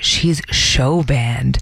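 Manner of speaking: dreamy delivery. Retelling what a man with a crush on a server said, imitating him dreamily. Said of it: "He says this all dreamily".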